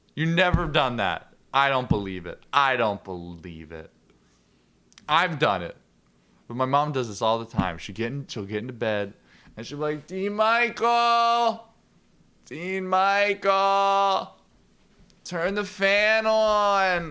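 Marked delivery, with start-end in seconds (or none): 10.1-17.1 lazy, very slow, high, drawn-out call. Retelling how mom calls out from bed: imitating mom calling from bed. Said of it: "that was my impression of you".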